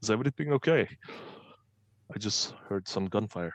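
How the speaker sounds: theatrical loud whisper. Voicing a character paging the party on the comm: whispering. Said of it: "and he's whispering".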